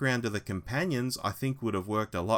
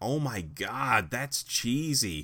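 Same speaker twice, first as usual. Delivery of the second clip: put-on very slow, drawn-out American accent. Quoting his wife's reaction to a cheesy moment, in an American accent. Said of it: "And I do an American accent, folks, because my wife is actually American".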